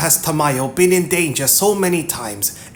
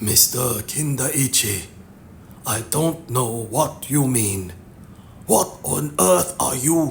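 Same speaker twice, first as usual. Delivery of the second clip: hoarse, throaty, hushed half-whisper; 4 semitones lower, 5 dB quieter than usual. Narrator reading a sweating man's reply after being stared down, in a throaty half-whisper. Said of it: "he whispered in a throaty voice".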